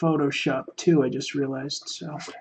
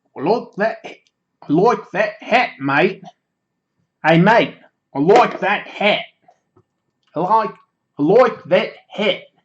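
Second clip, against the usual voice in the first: very loud, high, put-on Australian accent; 5 semitones higher, 8 dB louder than usual. Speaker going through listener comments tries out an attempted Australian accent. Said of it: "I'm trying to uh, do an Australian accent".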